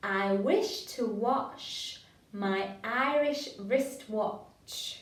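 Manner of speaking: quite slow, deliberate, careful enunciation. Leading listeners to repeat a phrase together, quite slow. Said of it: "quite slow".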